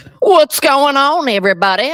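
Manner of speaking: very high, very loud zesty voice. Greeting everybody at the start: Caleb Williams impression. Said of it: "I tried my best Caleb Williams impression there".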